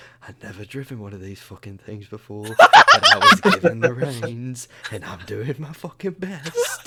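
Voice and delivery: whispering quietly to oneself. Driving a cart in a game scene, whispering to himself. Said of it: "I'm just whispering to myself".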